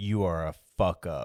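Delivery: flat, plain, matter-of-fact, unemotional deadpan delivery. Retelling what the wife says to him: imitating a plain, flat statement. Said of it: "very plainly states".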